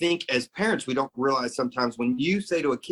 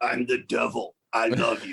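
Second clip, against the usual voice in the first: put-on rough, rasping chainsaw voice, slower; 3 semitones lower than usual. Speaker recalls a man who invited him up for a beer, imitating a chainsaw-rough voice. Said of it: "with that chainsaw voice".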